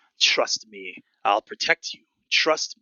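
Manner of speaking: whispered voice. Voicing a cursed sword that whispers into a character's head: sword's voice whispering. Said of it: "that same voice whisper into your head".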